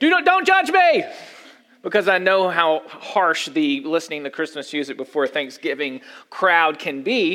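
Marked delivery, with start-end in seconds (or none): 0.0-1.0 scream, much higher pitch. The speaker retells a line screamed at someone, re-enacting the scream. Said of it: "I scream it to Justin".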